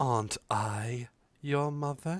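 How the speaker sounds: strangely feminine, unhurried voice. Voicing a mysterious voice heard in a player's mind: oddly feminine voice. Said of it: "The voice is oddly feminine".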